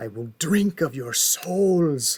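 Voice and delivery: sibilant creature-of-darkness hiss, menacing. The Witch King, a former king now a creature of darkness, addresses mortal men: hissing Witch King voice. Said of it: "he hisses".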